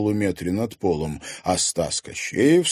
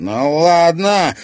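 loud, high hiss through gritted teeth; 7 semitones higher, 6 dB louder than usual. Narrator reading Anton's words after he is shoved to the floor, hissed through teeth. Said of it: "прошипел Антон сквозь зубы".

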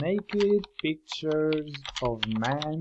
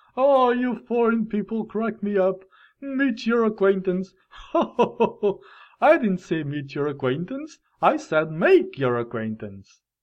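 put-on man's laughing voice, higher and louder; 5 semitones higher, 4 dB louder than usual. Retelling how a man answered him: imitating someone laughing while talking. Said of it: "he started laughing at me".

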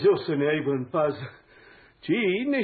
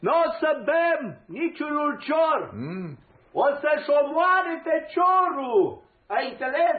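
shouting, much higher in pitch and slower; 12 semitones higher than usual. In a drama, a character shouts at another, who protests he is not deaf: shouting. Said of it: "Și de ce strigi?".

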